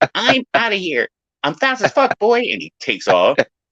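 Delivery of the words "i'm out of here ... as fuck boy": very high, squealed-out voice. Quoting a man from a video as he takes off, in a high-pitched voice. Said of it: "in that high pitched voice going".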